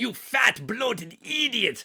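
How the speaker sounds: high, shrill, loud yelling. Quoting the character yelling at Gutman: imitating Peter Lorre yelling. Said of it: "when he's yelling at Gutman".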